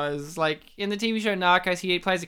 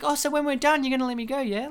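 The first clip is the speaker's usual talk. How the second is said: put-on childlike, simple-minded, small child voice; 8 semitones higher than usual. Retelling an actor's film line, said like a kid: imitating Michael Kenneth Williams, childlike. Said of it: "He says it like a kid".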